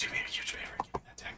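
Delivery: very quiet, hushed, secretive whisper. Asking another character to hand over a dagger: whispering. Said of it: "why are we whispering?".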